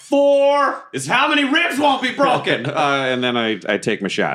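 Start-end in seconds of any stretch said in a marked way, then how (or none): 0.0-2.7 high, slow battle yell. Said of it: "So I yell".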